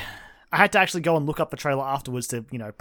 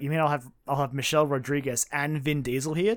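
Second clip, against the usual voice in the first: usual speaking voice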